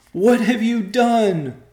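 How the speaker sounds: shrill, very high, very loud cry, stretched out. Rachel confronts her husband Joe: crying out. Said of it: "cried Rachel".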